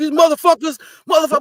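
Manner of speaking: shrill, very high-pitched, full-volume hollering. Imitating a father who swears constantly while talking: imitating father yelling. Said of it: "and he's yelling it".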